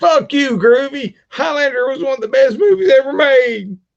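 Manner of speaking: fake outraged squeal.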